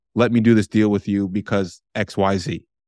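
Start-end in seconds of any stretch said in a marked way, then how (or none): none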